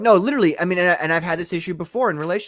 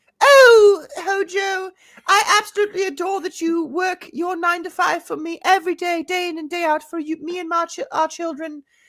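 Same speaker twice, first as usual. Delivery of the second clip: very high, put-on posh British accent; 12 semitones higher, 3 dB louder than usual. Trying to reach an international audience, she addresses someone in a fake British accent. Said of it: "pretending she's British for the role".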